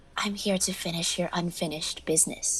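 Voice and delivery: mock hoarse, breathy voice. Replying to a woman who asks why they look alike: imitating her hoarse, wispy voice. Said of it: "like imitate her voice".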